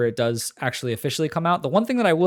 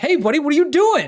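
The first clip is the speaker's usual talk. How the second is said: high, loud yelling. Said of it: "start yelling at you and be like".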